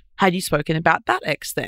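normal talking voice

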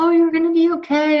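very high, soothing, comforting voice. Showing how a mother comforts a crying baby, in a higher-pitched voice. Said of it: "the higher pitched voice".

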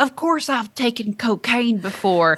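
put-on broad Southern accent, laid on thick. Telling a story about kids joking, the speaker quotes Henry in Henry's thick Southern accent. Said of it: "he's got like a thick Southern accent".

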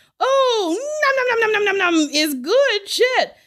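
screeched, very high, shrill, absurd fake French accent. Reading a message aloud, a line screamed while eating: screaming in an absurd French accent. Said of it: "screaming, ... in an absurd French accent".

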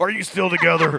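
very loud, high, belted put-on voice. Redoing the line for the others in a Macho Man Randy Savage voice. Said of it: "Is that your Macho Man Randy Savage voice?".

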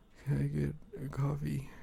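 hushed, drowsy, creaky, groggy just-woke-up mumble. Role-playing ordering from the cashier in the morning: put-on sleepy, groggy morning voice. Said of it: "in my morning voice".

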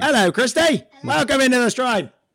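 put-on Australian accent. Greeting someone who just joined, showing off an australian accent. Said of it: "This is my Australian accent".

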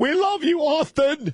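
very high, slow, drawn-out belted stage shout. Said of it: "I've been doing my [name] imitation".

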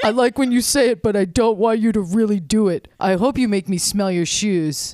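put-on, fake man's voice. Answering Bree's final line in a comedy bit, in a man voice. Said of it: "turn your man voice back on".

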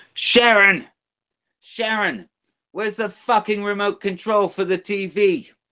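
very high, yelling impression voice. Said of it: "do it in [name]'s voice".

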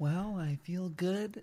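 hushed, very quiet public-radio host delivery. Answering his best friend's opening interview question; NPR voice. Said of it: "is that your NPR voice?".

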